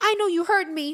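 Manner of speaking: put-on high young girl voice. Retelling how a daughter stomped into the room: imitating Muchi. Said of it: "She goes".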